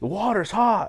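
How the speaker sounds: loud, shrill yell. Retelling how a big passenger complained about the water: imitating someone yelling. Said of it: "yelling at me".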